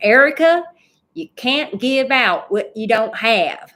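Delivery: put-on very strong, loud Southern Texas accent. You quote what a woman who changed your life always told you, imitating a very strong southern texas accent. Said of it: "in a very strong Southern Texas accent".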